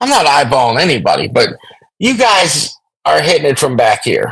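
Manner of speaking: ordinary talk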